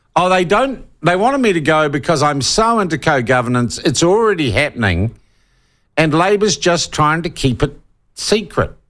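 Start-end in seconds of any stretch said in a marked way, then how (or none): none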